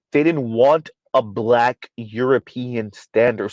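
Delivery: slow, deliberate, carefully separated words. Repeating a point to the audience, said slowly. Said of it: "Let me say that again slow".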